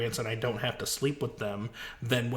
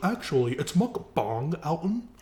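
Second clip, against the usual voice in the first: put-on American accent, slow, high, carefully enunciated; 5 semitones higher, 3 dB louder than usual.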